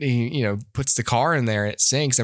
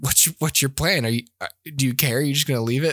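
usual speaking voice

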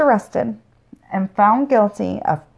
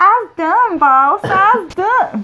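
put-on Southern accent, much higher pitch; 10 semitones higher, 5 dB louder than usual. Wrapping up their story, the speaker tells the boss they're finished, Southern accent. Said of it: "Motherfucking Southern accent again".

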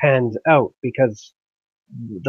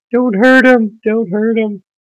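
put-on crying, much higher and louder; 10 semitones higher, 8 dB louder than usual. Retelling a joke scene as cops take her husband away, mock crying plea. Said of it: "she's crying as the cops are taking her boyfriend".

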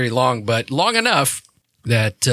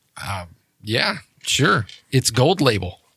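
ordinary talk

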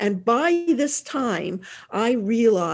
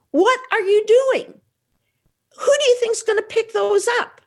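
mock shrill, very high screaming shriek; 5 dB louder than usual. Recounting finding him emptying socks onto the floor, retelling a scream. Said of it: "And I screamed".

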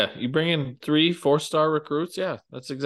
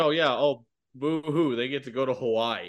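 put-on, smart-aleck, sarcastic boo-hoo whining; 4 dB quieter than usual. Complaining that a team finishes its season in hawaii: mock sarcastic whining. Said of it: "I'm being a smart ass saying".

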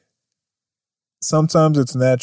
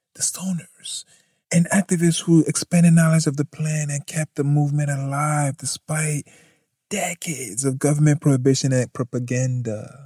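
hushed, put-on reading voice. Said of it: "Do you like my reading voice?".

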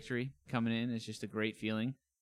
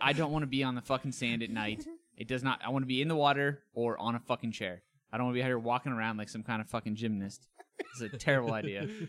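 ordinary talk

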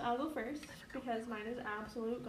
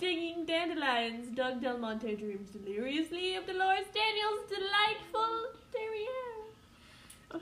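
awful, vague, pitched-up fake British accent; 7 semitones higher, 3 dB louder than usual. Reading a line aloud for the others, in a vague fake UK English accent. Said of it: "I don't even know what kind of accent it is. I guess like a UK English accent".

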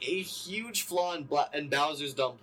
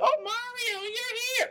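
shrill, piercing, very high yell. Recapping an episode and mocking Mario's girlfriend's friend, imitating a character's yell.

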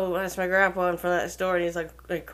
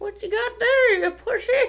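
put-on old man voice, pitched very high. Imitating how the grandparents always talked, in an old man voice. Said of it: "I'd be making an old man voice".

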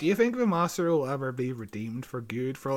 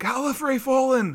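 very high, frantic, shrill shrieking scream; 11 semitones higher, 5 dB louder than usual. Retelling a scene where the prophecy lady screams: imitating someone screaming. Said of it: "the prophecy lady starts screaming".

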